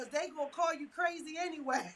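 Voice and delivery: laughing while speaking. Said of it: "Shanita said".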